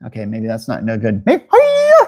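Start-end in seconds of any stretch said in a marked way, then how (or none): 1.3-2.1 very high, loud put-on cry. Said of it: "maybe that's a good impersonation".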